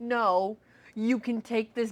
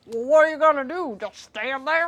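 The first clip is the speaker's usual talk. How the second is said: put-on raised, high-pitched old-man voice; 4 semitones higher, 5 dB louder than usual. Describing a story character hemming and hawing at the front door: Larry old-man voice. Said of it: "That's how I picture him talking to because he's an old man".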